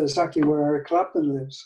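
ordinary talk

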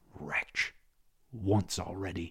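through gritted teeth. A man, seeing the soldiers, recalls an earlier disaster on that spot; through gritted teeth. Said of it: "he ground his teeth".

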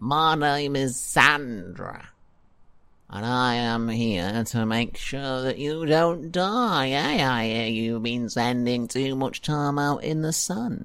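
whining skeleton-style voice. Voicing Sandra, a skeleton NPC in the campaign, to the players; whiny Sandra skeleton voice. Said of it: "all my NPCs in this campaign have turned really whiny".

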